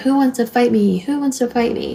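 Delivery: put-on belligerent, aggressive, screaming, spoiling-for-a-fight taunt. Retelling how he screamed at people as they drove by: retelling his screaming. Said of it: "he's screaming at people".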